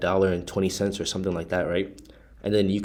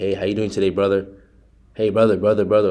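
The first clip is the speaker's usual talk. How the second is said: mock salesy tone, louder; 5 dB louder than usual. Retelling own phone pitch from a call: imitating own salesy pitch. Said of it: "it sounds so salesy".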